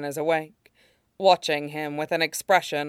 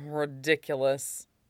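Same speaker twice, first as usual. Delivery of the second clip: muttered, quieter; 5 dB quieter than usual. Lan Wangji replies to Wei Wuxian's teasing question, muttering. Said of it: "he mutters".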